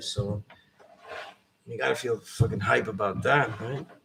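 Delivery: slow, heavy, very strong sarcasm. Commenting on someone who survived when others were killed: sarcastic as hell. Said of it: "I'm being sarcastic as hell".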